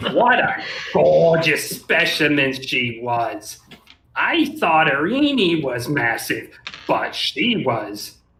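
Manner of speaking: snooty, sneering, condescending, mocking delivery. Reading a passage aloud, mocking it: condescending, mocking voice. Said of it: "read in a condescending, mocking voice".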